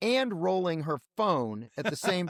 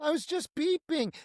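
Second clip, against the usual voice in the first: mocking, mousy, frightened, timid woman's voice, higher; 10 semitones higher than usual. Mocking a woman's claim about her driving, mocking mousy frightened voice. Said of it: "that mousy woman who was so afraid".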